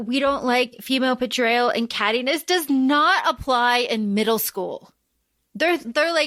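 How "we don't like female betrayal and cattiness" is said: ordinary talk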